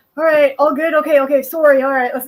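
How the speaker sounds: mock-apologetic, polite Canadian voice with put-on anger. Retelling two drivers' road rage, imitating apologetic canadian drivers. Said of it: "the most Canadian like, like road rage".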